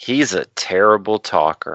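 mock grave, earnest, dead-serious, slow delivery. Retelling what the three-year-old daughter said: imitating daughter's dead-serious tone. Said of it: "with all the seriousness that she could muster".

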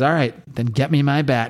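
ordinary talk, nothing marked

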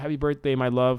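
ordinary talk

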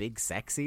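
plain

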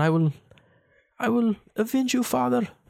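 put-on high-pitched Norse accent. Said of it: "what does he say in the Northman".

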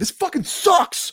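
very high-pitched, exasperated, fed-up outburst. Retelling watching a movie's last twenty minutes: retelling own yell at screen. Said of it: "I'm yelling at my screen".

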